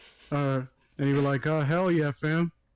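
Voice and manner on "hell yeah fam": put-on casual, slangy way of talking. Imagining asking Zack Snyder to play a role, imitating Zack Snyder. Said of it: "that's what he talks like".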